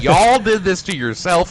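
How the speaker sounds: put-on loud American accent. Talking about a vote, a speaker pulls out a put-on American dialect. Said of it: "I'm pulling out my American dialect".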